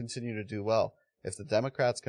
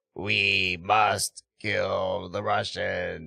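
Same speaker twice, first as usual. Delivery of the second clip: fake, very slow, drawn-out, rough tough-guy voice; 2 semitones lower, 4 dB louder than usual. Imitating a politician's acting voice from an old TV clip: imitating Zelensky's fake tough guy voice. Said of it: "the funny, like, acting voice he put on".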